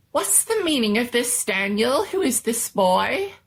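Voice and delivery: rather squeaky, high-pitched little man voice. Narrator voicing the little man questioning Daniel, in a rather squeaky voice. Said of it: "He spoke in a rather squeaky voice".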